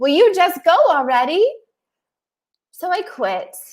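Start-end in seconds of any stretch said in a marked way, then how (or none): 0.0-1.5 high, pushy yell, acted out. Describing someone standing over a child: imitating someone yelling. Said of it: "standing over them yelling".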